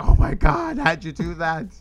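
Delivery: acted, stunned, loud, high, drawn-out astonishment. Retelling how everyone reacted when Reggie jumped the fence, mock-shocked onlookers. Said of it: "And they're all like shocked".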